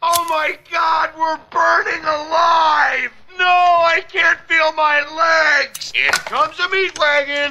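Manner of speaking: put-on high screaming. Joking about a car whose brakes fail near a cliff, imitating a family screaming. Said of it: "your family screaming".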